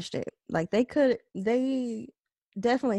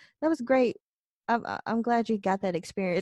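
put-on dismissive tone. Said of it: "It's just the way he said it".

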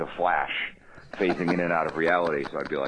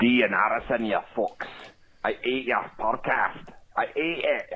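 fake Scottish accent, higher; 6 semitones higher than usual. Leaving a joking phone message for a podcast: put-on Scottish accent. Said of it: "It's a pretty good Scottish accent".

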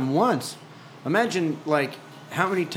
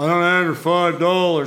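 deeper put-on voice, much louder; 7 dB louder than usual. Acting out arguing with himself over five dollars, in a deeper put-on voice. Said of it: "like a little voice or like a deeper".

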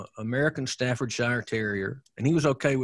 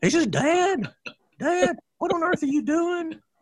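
very high-pitched, put-on dog voice; 5 dB louder than usual. Voicing the family hound dog Buster asking his Dad something: Buster's dog voice. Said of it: "the Buster channeling voice is much higher than mine. He talks sort of like this".

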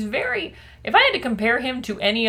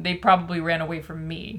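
ordinary talk

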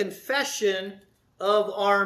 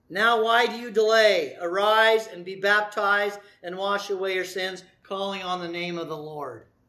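ordinary talk, nothing marked

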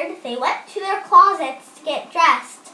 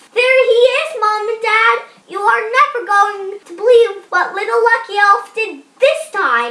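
loud, high-pitched yell; 7 semitones higher, 4 dB louder than usual. Nick finds the elf in his mom's shoe and calls to his parents, shouted. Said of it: "shouted Nick".

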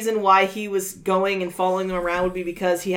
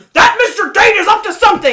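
very loud, high, full-blast shouting voice; 13 semitones higher, 11 dB louder than usual. Discussing impressions of Toad, a speaker acts out his usual outburst, loud Toad voice. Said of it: "he never had an inside voice".

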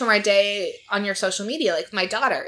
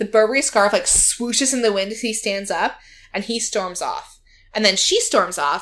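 usual speaking voice

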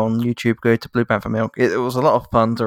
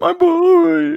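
very high, drawn-out fake mourning wail; 5 dB louder than usual. Joking about a movie scene, imitating a man mourning his child: mock grieving cry. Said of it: "we're mocking a man mourning his child".

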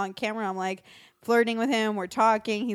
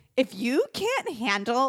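animated delivery with wide, swooping pitch swings; 3 semitones higher than usual. Retelling a clip taken during green screen days: imitating own past words. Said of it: "I'm doing an impression of myself".

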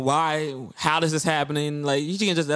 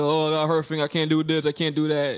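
mock whiny crying and whimpering. Teasing a friend about his sprained finger: mocking whiny crying.

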